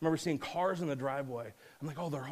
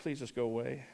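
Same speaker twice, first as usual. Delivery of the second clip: acted, messy mock sobbing, lower and quieter; 2 semitones lower, 3 dB quieter than usual. Speaker retells their thoughts while crying at a gravesite: retelling messy crying. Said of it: "it was just like messy crying".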